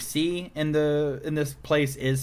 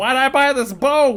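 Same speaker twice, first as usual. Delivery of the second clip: shrill, very high yelled-out cry; 11 semitones higher, 7 dB louder than usual. Retelling an old man yelling out as his boat starts tipping over, retelling a yell. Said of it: "he yells out".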